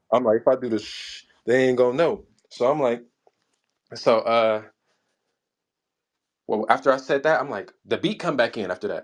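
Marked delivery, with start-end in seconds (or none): none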